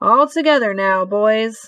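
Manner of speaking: ordinary delivery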